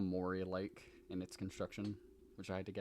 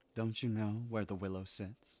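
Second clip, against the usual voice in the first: spooky, creepy storyteller narrator voice; 3 dB louder than usual. Talking about a favorite creepy story, showing off a creepy narrator voice. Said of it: "I get to do my creepy narrator voice".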